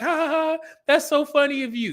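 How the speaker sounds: woman's high voice, laughing through the words. Retelling a tv scene where a woman laughs at a date: imitating a woman laughing. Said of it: "she started laughing like".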